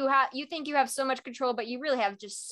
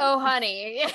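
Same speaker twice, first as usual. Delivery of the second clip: sweet put-on older man voice, louder; 4 dB louder than usual. Imitating Pierce's reply to a villain: sweet Robert Redford voice. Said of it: "sweet Robert Redford voice".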